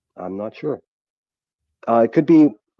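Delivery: talking while chewing. Unsure what was asked about the screen, answering while talking while chewing. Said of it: "Excuse me, I'm chewing".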